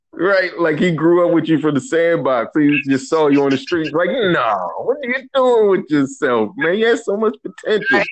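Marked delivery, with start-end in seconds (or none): 4.1-8.0 acted, appalled, disgusted, pitched-up dismayed voice. Retelling a friend's reaction, imitating a disgusted friend. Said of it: "he was disgusted with your decisions".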